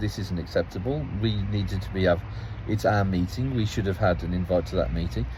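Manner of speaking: normal talking voice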